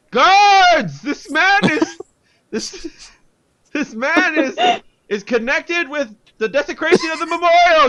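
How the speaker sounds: yelling in a character voice. Calling the guards on a man in a role-play scene: yelling in character. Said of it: "I yell it louder than him".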